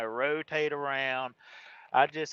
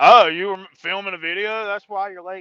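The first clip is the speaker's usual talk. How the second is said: very loud, raised, pitched-up voice; 5 semitones higher, 12 dB louder than usual. Voicing what a customer would say to a late driver, imitating a raised voice. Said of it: "I raised my voice just then".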